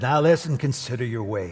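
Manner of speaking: put-on very old man voice, ancient-sounding. Quoting the old prophet Haggai's warning: Haggai old man voice. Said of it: "This is what o-, o-, old, old man says".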